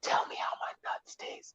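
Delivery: very quiet, hushed, breathy whisper. Retelling the father's reply during a roast: imitating a whisper. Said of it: "And my father whispers".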